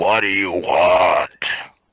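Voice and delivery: disgruntled, deep, booming voice. Voicing someone unhappily woken from slumber inside the tower, in a deep voice. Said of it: "this deep voice emanating".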